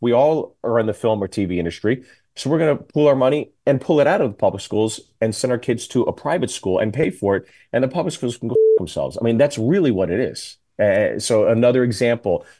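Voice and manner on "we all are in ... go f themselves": usual speaking voice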